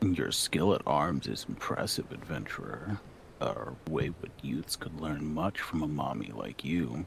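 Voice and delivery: deep, low put-on character voice. Dubbing a game cutscene, the speaker voices a character in a deep voice. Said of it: "Uh, I'll try to do the deep voice from the last time I voiced them. / This hope I will guard with my life".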